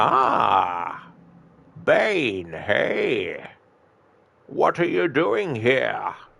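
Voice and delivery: character voice with pitch swooping around. Showing how they speak before adding a Pringles can: Bane voice. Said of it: "I basically um speak like this".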